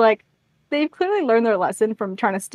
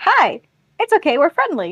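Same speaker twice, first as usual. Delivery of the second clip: mock dorky, uncomfortable, friendly, awkward, pitched-up voice; 5 semitones higher than usual. Retelling how John walks into the village: imitating John awkwardly. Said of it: "He's so awkward".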